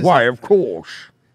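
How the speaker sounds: mock loud belting, no accent. Mocking a poor impressionist's line: imitating the bad impression. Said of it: "He's just going".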